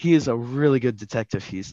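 ordinary delivery, nothing marked

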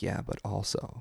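hushed doubting voice. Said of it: "that little dark voice that's like".

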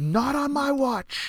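whooping triumphant yell, very high and slow. Retelling a friend celebrating an ace on the golf course: imitating someone yelling.

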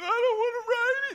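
put-on very high, whiny, blubbering little boy crying. Retelling his son refusing a water ride, imitating his crying son. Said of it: "He's crying".

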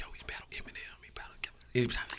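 quick, hushed crowd whispering. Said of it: "everybody whispering about it".

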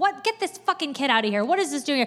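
put-on irate bark, fast and rattled off. Retelling how an executive leaned out his window at a screaming child: retelling an angry yell. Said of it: "this very powerful executive just yelled at him".

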